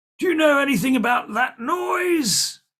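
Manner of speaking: put-on very high, loud old man voice, sounds drawn out. Voicing an old man who looks out into the hallway: old man character voice. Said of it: "an old man looks out with his glasses on".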